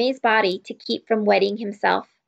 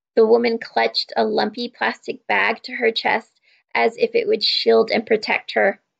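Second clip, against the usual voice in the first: ordinary delivery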